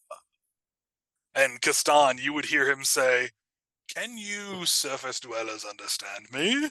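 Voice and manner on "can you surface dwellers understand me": put-on swooping old sea turtle character voice. Voicing an old sea turtle who asks the players a question: old sea turtle voice. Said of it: "he looks at you all very slowly and goes".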